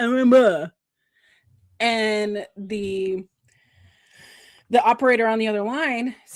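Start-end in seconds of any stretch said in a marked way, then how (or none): 0.0-0.7 loud mumble, words mashed by a full mouth. Retelling a radio caller answering with peanut butter in his mouth: imitating talking with mouth full. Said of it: "he's got his peanut butter in his mouth".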